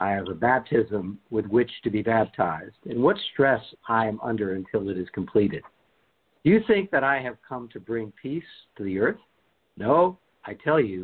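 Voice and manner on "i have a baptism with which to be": ordinary delivery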